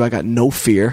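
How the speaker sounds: ordinary talk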